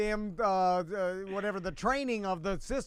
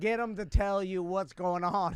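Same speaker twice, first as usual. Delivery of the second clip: plain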